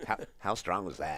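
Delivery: very loud, rapid, hyped, amazed commentator style. Reacting to a shot in a match, doing Joe Rogan impersonating Earl Strickland. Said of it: "In my best impersonation of Joe R-, Rogan impersonating Earl Strickland".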